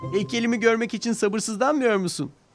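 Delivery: calling out. Thomas calls out to Edward, calling out. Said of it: "diye seslendi Edward'a".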